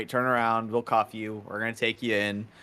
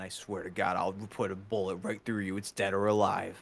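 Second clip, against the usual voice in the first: put-on threatening voice, quieter; 5 dB quieter than usual. Voicing the bounty hunter Courage pointing a gun: threatening bounty hunter Courage. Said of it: "Courage is gonna point at you and say".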